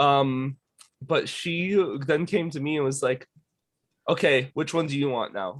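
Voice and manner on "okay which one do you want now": put-on pushy voice growing meaner. Retelling a seller trying to force a sale: imitating someone getting meaner. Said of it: "kept being meaner and meaner to me".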